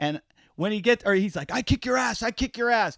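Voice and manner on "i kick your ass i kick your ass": high, repeated screaming. Retelling a man who got out of his car at the speaker, imitating someone screaming. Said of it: "starts screaming at me".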